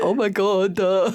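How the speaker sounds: goofy, silly put-on voice, very slowly drawn out. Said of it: "I find myself doing it".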